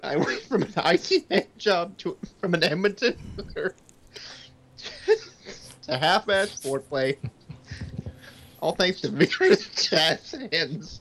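slow reading while cracking up with laughter. Reading game cards aloud to other players, laughing while reading. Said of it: "I can't stop laughing".

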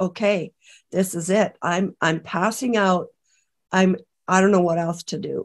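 ordinary delivery

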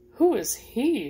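keen, curious. One of Bree's friends, crowding around, asks the narrator; eager. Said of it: "Sharon asked eagerly".

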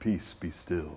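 very low, calm, hushed deep baritone. Imitating how people picture Jesus speaking, calm baritone Jesus voice. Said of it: "speaks in this really calm baritone voice".

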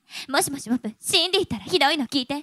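dubbed foreign-film woman's voice, Japanese movie-dub style. Performing a long-titled requested voice, in a dubbed foreign-film woman's voice. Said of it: "洋画吹き替え版の日本人女性の声".

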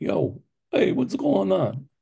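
put-on Italian-American neighborhood accent, high and swooping. Showing off an Italian Taylor Street character: put-on Italian neighborhood accent. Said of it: "I do my Italian Taylor Street character".

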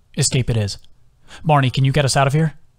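plain

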